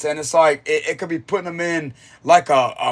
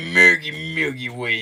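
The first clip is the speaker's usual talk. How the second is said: raspy, creaky voice. Demonstrating how the phrase should be said; raspy voice. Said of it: "You gotta have like that rasp voice".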